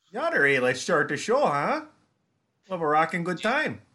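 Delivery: Minnesota accent, pitched high. Told they sound like Frances McDormand in Fargo, a speaker plays along in a Frances McDormand Fargo voice. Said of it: "Frances McDormand in Fargo".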